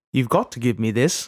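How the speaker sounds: put-on Scottish accent. Quoting an actor's audition line, asked to say it like Ewan McGregor. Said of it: "Now say it like Ewan McGregor".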